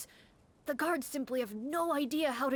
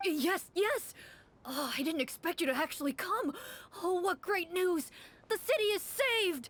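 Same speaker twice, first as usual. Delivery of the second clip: put-on high, stock cartoon-style teenage boy voice; 5 semitones higher than usual. A game character greets the hunters who came for his commission letter: teenage boy voice. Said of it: "This is like the teenage boy voice".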